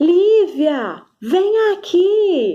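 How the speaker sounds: mock high shout with aqui stretched long. Speaker giving an example, acting out a mother calling her child: imitating a mother shouting. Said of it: "a mãe grita assim".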